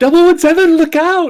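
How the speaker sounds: high, loud shout.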